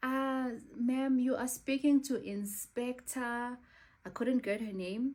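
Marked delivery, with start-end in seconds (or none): 0.0-3.6 put-on heavy West African accent, slow and deliberate. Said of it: "she spoke in a very thick West African accent".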